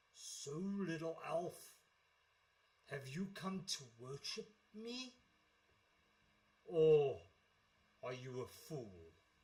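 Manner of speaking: smoke-breathing monster voice. Voicing a horned, smoke-breathing creature questioning an elf: horned smoke-breathing creature voice. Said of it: "he looks at you and he says".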